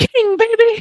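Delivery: shrill, very high, shrieking scream. Retelling how he screamed at another person, retelling a high-pitched scream. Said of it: "screams with a high pitched voice".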